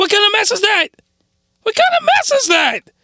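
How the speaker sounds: very high-pitched, startled, shocked disbelief. Speaker reacts to something that took them by surprise: surprised, voice going high. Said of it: "Sorry for the voice going high".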